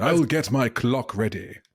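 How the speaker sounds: slow, put-on English accent. Repeating a misheard line about getting a clock ready: put-on English accent. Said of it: "I'll have to do my English voice again".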